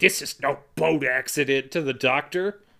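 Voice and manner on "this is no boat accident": irritated, insistent, angry, pissed-off tone. Retelling an autopsy scene, telling the doctor: imitating Dreyfuss getting pissed. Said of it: "then he gets pissed and he's like".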